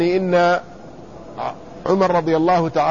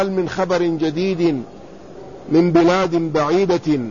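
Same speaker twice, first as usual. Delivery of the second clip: normal talking voice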